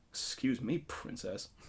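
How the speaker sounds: muttered under breath. Imagining a game scene, the escort answers the princess: muttered under his breath. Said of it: "he'd be like under his breath".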